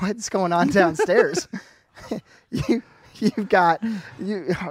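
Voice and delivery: talking through laughter. Getting distracted by crashing noises downstairs mid-discussion: laughing while talking. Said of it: "I'm laughing because".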